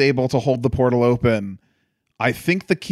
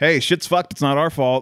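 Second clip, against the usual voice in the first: normal talking voice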